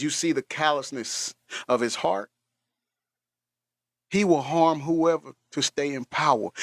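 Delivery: ordinary delivery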